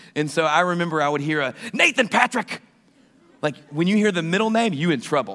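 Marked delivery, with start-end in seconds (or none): 1.8-2.6 play-acted, pitched-up, furious mother yell. Recalling a mother calling out a child's full name, imitating mom yelling. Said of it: "When mama yells".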